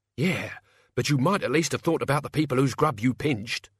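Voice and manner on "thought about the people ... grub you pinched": ordinary delivery, nothing marked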